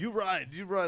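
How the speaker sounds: put-on high, rude yelling. Retelling a scene where a cab driver yells at a passenger: imitating a cab driver yelling. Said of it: "he's just yelling at him".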